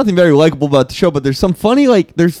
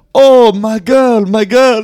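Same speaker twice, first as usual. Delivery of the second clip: put-on Indian accent, high, very slow, drawn out; 6 semitones higher than usual. Imagining a cheating husband confessing to his wife: put-on Indian accent. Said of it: "my Indian's not as good".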